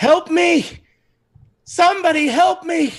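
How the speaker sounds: shrill, desperate high-pitched scream. Narrating a game, a voice behind a locked door, screaming for help. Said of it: "He's screaming".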